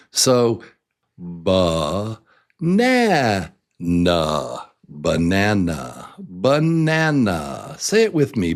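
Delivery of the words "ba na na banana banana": stress on na in banana, slower. Speaker demonstrating word stress for listeners to repeat, stressing na in banana.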